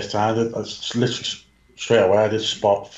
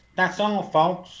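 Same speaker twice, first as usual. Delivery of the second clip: cartoon pig voice impression, much higher; 9 semitones higher than usual. Pushed by another speaker to do an impression, Porky Pig impression. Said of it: "do an impression of Porky Pig".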